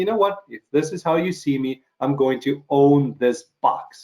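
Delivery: ordinary delivery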